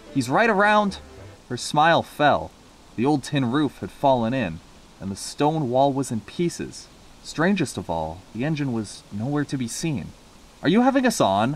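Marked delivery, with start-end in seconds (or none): 10.6-11.6 stern, severe, reproving tone. Narrator reading a man's question to Nancy, spoken sternly. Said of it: "Asked one man sternfully".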